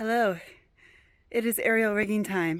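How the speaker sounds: out of breath. Starting the aerial rigging segment after putting up a ladder, out of breath. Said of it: "I'm already out of breath".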